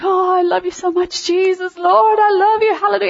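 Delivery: tearful, adoring voice. Describing crying in God's presence, the speaker recreates the prayer: reenacting tearful prayer. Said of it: "I just cry".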